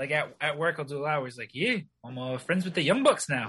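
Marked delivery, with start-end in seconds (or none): 1.5-3.5 put-on wrestler voice with New Zealand accent. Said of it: "I'm always practicing a Kiwi accent".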